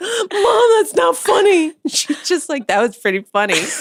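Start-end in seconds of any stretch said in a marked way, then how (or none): 0.0-1.7 tearful, hurt, weepy, very high and slow. Retelling how he, wet from the shower, protested to Mom, imitating a weepy voice. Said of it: "He's like weepy".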